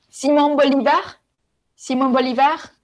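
French accent and pronunciation. Saying a name after being asked to: French accent. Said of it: "say his name in a French accent".

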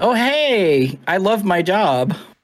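very slow, bright, high, chipper voice, "hey" stretched. Imitating how someone sounds when answering calls: mock-chipper voice. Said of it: "She's more like chipper".

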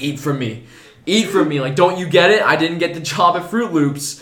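loud, high-pitched screaming. Acting out a man crawling to people on the subway, retelling a scream.

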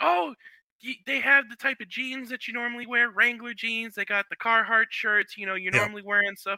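play-acted, excited, eager chatter, high and quick. Retelling how the speaker's wife reacted in a general store, imitating Rachel's excitement. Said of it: "She was getting all excited".

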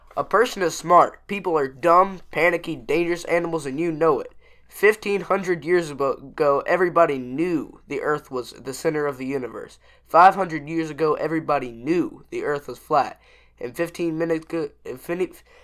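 usual speaking voice

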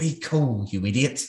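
hissed, close voice, leaning in. The narrator voices Mr. Pin speaking to a player's character, hissing. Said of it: "he leans over and hisses in your".

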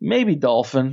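put-on straight-faced, matter-of-fact deadpan delivery. Retelling a companion's answer after a close call: imitating a deadpan reply. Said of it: "the straight face".

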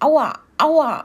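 high-pitched, yelping outcry of pain. Pecked in the neck, Kalle flees the stall screaming in pain. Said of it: "schrie Kalle".

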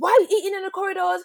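high, screaming teacher voice. Retelling a school hallway incident, the speaker quotes a teacher screaming in their face. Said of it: "comes up to me like screaming at my face".

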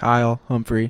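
typed-in text-to-speech computer robot voice. Introducing the episode's guest by name, computer robot voice. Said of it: "That's my computer robot voice".

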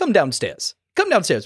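clumsy put-on sing-song voice, pitch swinging around. Recalling a Batman Returns scene: bad Christopher Walken impression. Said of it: "there's my bad Walken impression for you".

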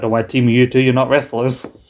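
ordinary talk, nothing marked

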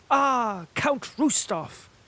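very high, joyful, delighted high-pitched cry. Pierre, hearing of Count Rostov's dinner invitation, recognises the count's son: joyful exclamation. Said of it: "exclaimed Pierre joyfully".

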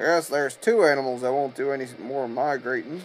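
ordinary delivery

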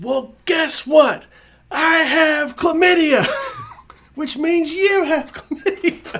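put-on very high, shrill, loud drunken screaming. Retelling a drunk woman yelling at a man putting her in a cab; imitating her screaming. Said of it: "And she starts screaming".

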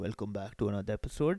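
heavy, thick voice. A podcast host imitates how they open each episode: thick intro voice. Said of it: "I make my voice so thick".

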